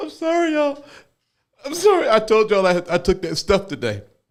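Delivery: high, giggly voice laughing right through the words. Apologizing to viewers after taking Delta eight, laughing while talking. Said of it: "forgive me for laughing so much".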